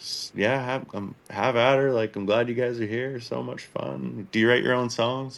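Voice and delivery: laid-back, easygoing, friendly and loose. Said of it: "but super quiet, super chill".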